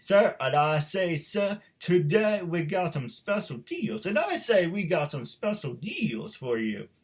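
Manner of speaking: put-on cartoon rooster voice. Doing the Looney Tunes chicken as a salesman: Foghorn Leghorn voice. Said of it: "the last voice I do like doing... it's a chicken from Looney Tunes".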